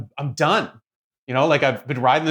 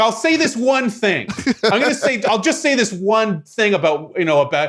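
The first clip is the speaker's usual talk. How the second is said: high, aggressive, insistent delivery; 8 semitones higher, 4 dB louder than usual. Imagining the comedian getting aggressive in the bit: aggressive Chris Rock impression. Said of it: "in Chris Rock's voice".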